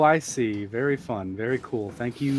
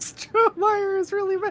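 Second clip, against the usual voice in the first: put-on girl voice, higher. Reading game notes aloud in a different voice: generic girl voice. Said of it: "I'm just doing the most generic girl voice I can possibly do".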